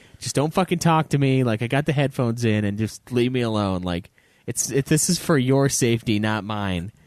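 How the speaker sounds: normal talking voice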